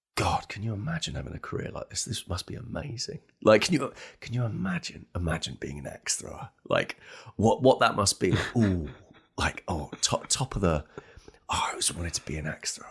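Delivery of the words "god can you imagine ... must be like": put-on muttering under the breath, quieter. Retelling what they always say to someone in the group: imitating muttering under breath. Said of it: "I sort of say under my breath".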